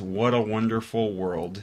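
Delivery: normal talking voice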